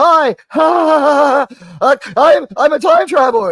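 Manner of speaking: very high, loud, stiff forced laugh, slow drawn-out ha's. Mocking an actor's wooden performance as Time Traveler Wesley: imitating Wesley's stiff fake laugh. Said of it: "He can't affect a laugh".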